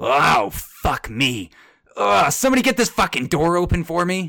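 high, pained groaning, words moaned out. As an injured figure pounding on the guild hall door, horrible groaning. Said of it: "you hear a horrible groan".

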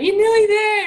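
high, loud, cheering yell.

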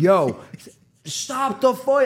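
put-on very slow, high, stretched-out, drawn-out screaming. Retelling watching a fight on TV, imitating own screaming.

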